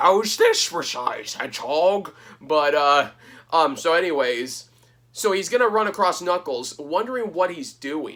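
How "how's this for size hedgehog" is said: swooping, animated cartoon-villain voice, wide pitch swings, played big. Acting out a scene in a retold plot: Doctor Robotnik voice. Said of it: "my Doctor Robotnik or Eggman impression".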